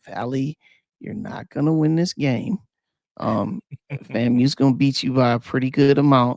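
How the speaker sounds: very calm, cool, composed, even tone. Addressing Valley, next week's opponent, about the game: very calm voice. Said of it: "I'm gonna say this in a very calm voice".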